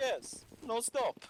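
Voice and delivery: put-on Russian accent. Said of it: "the Russians then chime in with".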